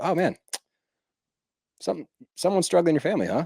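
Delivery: breezy, nonchalant tone. Retelling how a man said something to them: mock-casual, nonchalant tone. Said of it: "casual nonchalantness of how he was saying it".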